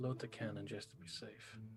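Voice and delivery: half-whispered, barely audible, very quiet aside. Half-whispering an order to the old man before he leaves: half-whispering in character. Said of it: "I'm just gonna whisper to him".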